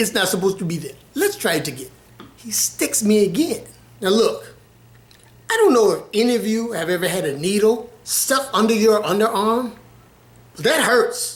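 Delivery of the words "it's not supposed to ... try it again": put-on heavy Indian accent, faster. Quoting the man who keeps sticking him with a needle, heavy indian accent. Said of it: "had a heavy Indian accent".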